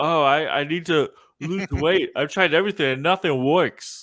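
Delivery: high-pitched put-on New Jersey accent. Recounting a scene, quote the fiancée in a fat suit in a New Jersey accent. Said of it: "with her New Jersey accent".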